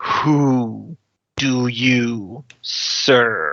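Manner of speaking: otherworldly telepathic creature voice, drawn-out "who". A narrator voices a creature speaking to all the players, booming telepathic voice. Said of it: "it speaks in a booming telepathic voice".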